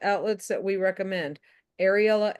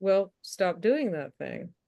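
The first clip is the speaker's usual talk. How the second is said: very calm, simple, even delivery. Retelling a comedy sketch about a therapist: calmly, imitating Bob Newhart. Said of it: "Bob Newhart just very calmly says".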